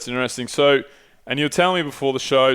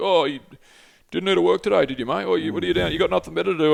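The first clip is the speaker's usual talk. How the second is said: put-on high, jeering, mocking taunting tone; 5 semitones higher than usual. Retelling how a journalist taunted a protester: imitating someone mocking. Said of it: "taking the piss out of the climate activists".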